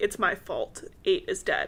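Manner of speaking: ordinary talk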